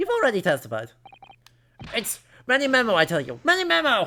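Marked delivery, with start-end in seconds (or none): 1.9-4.1 loud yelling. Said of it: "What are you yelling about?".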